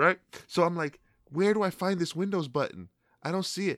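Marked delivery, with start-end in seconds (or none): 1.3-3.8 acted-out dumb, totally lost, baffled manner. Retelling a prank on a scam caller, imitating acting clueless. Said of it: "acting stupid".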